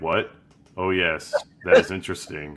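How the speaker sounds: level, unvaried, flat monotone, no lift. Showing how he himself would respond, monotone. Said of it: "I'm too monotone".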